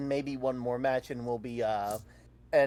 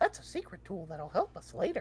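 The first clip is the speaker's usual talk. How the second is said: hushed, whispered, squeaky cartoon-mouse voice; 6 semitones higher, 4 dB quieter than usual. Playing the host of a Mickey Mouse Club bit addressing kids, in Mickey Mouse voice. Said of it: "you can't say that in a Mickey voice".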